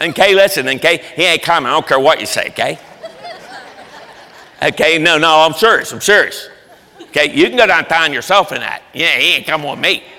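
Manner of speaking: Pittsburgh local accent. Retelling Paul's words to Barnabas, the speaker does them in a Pittsburgh accent. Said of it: "I'll do it with a Pittsburgh accent".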